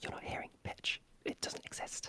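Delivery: pure whisper, no voicing at all, very soft. Explaining how the vocal folds make pitch, whispering. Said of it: "So when I whisper like this".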